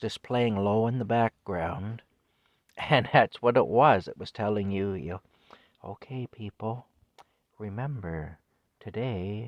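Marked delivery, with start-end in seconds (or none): 5.8-9.5 soft, hushed, soothing female announcer voice. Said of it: "a very soothing female voice".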